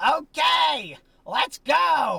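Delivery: very high, shrill, raspy, rough scream. Retelling how the grandmother screamed out to the empty room: retelling a scream. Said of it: "she screams out to the otherwise empty room".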